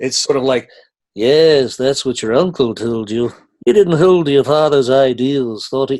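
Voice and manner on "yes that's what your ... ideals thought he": put-on nasal voice with a slight Liverpool accent. Showing the Obi-Wan voice from an audition: nasal Obi-Wan voice, a bit Liverpool. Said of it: "it's kind of a nasal".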